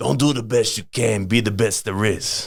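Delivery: horrible put-on New York Italian accent. Quoting advice from an old-school Italian man; bad East Coast Italian accent. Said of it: "I do his accent horribly".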